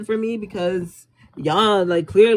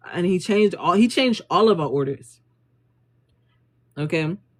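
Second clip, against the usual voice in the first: ordinary talk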